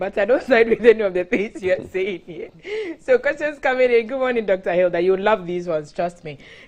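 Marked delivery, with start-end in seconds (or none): 0.0-2.5 words spoken through laughter. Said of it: "I'm laughing".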